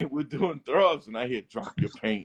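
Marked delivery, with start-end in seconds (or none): 1.4-2.2 low, deep, breathy whisper. Retelling words heard from behind while painting: imitating a deep voice. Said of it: "In this deep voice".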